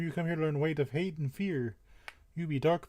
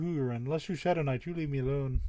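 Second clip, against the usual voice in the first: ordinary talk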